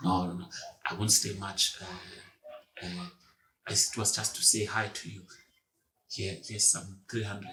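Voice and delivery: put-on very shy old man, deep and hushed. Retelling a visit from a very shy old guy, imitating a shy old man. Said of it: "the shy, very shy guy also".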